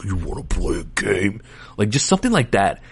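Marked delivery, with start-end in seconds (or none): 0.0-1.4 very creepy, hushed, soft villain voice. Recalling how Jigsaw spoke through coded messages in the movie, scary Jigsaw voice. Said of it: "he had like a scary voice".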